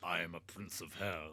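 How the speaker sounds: put-on demonic lord character voice. Playing a prince of hell who can break worlds, in a put-on character voice. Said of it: "I'll do I'll do it in a voice".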